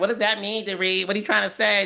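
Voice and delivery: mock prickly, defensive tone, high-pitched. Retelling a cast argument on the show: imitating Sutton getting defensive. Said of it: "Sutton got real defensive".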